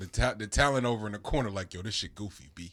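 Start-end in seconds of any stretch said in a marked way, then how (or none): 1.7-2.7 put-on old-school New York street-talk accent. Imitating a talented person in the corner: imitating old new york talk. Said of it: "from old New York".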